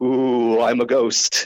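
very slow, put-on spooky ghostly moan, drawn out. Telling a story about a burglar disguised as a ghost, fake ghost voice. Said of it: "but the burglar says".

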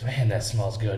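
usual speaking voice

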